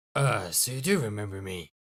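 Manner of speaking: mysterious-sounding voice. Voicing a phone caller in a game: mysterious voice. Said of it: "continue doing mysterious voice".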